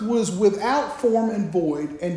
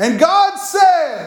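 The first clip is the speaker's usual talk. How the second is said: loud, high announcing voice, "said" drawn out; 7 semitones higher, 8 dB louder than usual. Retelling what Jenny suddenly said from behind the curtain, imitating Jenny's loud voice. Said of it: "That's pretty loud".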